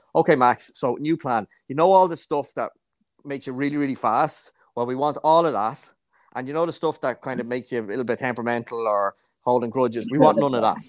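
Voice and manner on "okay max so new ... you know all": usual speaking voice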